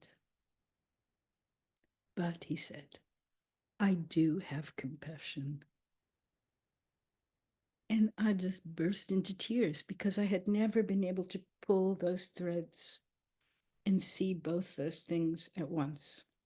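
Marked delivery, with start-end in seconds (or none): 3.8-5.6 very deep, low, soft voice. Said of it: "he has a very deep voice".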